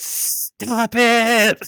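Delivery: high-pitched goblin voice. Retelling a fight where father and son trade goblin voices, Harry's goblin voice. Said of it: "they're doing goblin voices at each other".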